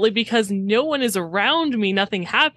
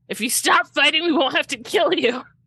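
high-pitched, acted, in-character yell; 6 semitones higher than usual. Playing a character in combat who yells at the enemy: yelling in character. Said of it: "Krat just yells".

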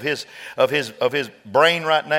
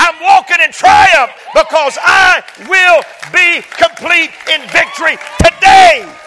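very loud, very high, soaring, swooping preaching; 14 semitones higher, 11 dB louder than usual. Preacher addresses the folks listening, getting loud. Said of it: "I know I'm getting loud".

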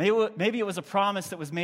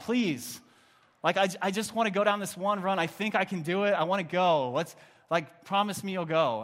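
put-on child voice, earnest begging tone. Retelling begging a parent as a child: imitating a child pleading. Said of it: "I'm pleading with my mom".

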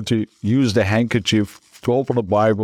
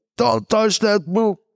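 imitated shout, higher; 12 semitones higher than usual. Retelling how the grandfather shouted a warning: imitating grandfather shouting. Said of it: "he started shouting at me".

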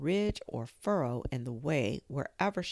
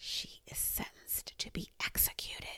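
very soft, hushed whisper, right into the ear. The Rabbit rises on tiptoe and speaks close to Alice's ear: whispered. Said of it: "and whispered".

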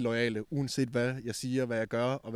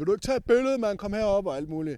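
loud, high-pitched, rowdy hollering; 8 semitones higher, 5 dB louder than usual. Speaker recounts people who spot him calling out to him, retelling people shouting. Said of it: "og står og råber".

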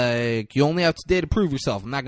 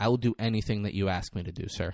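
put-on serious voice, lower and quieter; 5 semitones lower, 6 dB quieter than usual. Retelling a movie scene, quoting the rookie's answer: serious Ethan Hawke delivery. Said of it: "Says just like that".

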